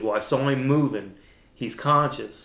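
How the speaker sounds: normal talking voice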